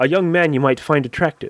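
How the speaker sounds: plain reading voice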